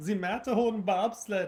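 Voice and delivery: high, slow tour guide announcer voice.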